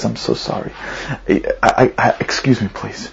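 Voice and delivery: whispered, very slow, breathy, tears held back. Retelling how a man apologized and excused himself, holding back tears. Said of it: "he's holding back tears".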